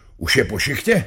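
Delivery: nervous, anxious tone. Uncle Baloun, just woken up, asks his question nervously. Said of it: "Zeptal se nervózně".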